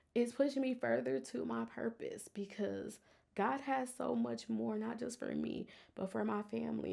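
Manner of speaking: speaking while fighting back tears. Speaking to the audience, holding back tears. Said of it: "I'm trying not to cry".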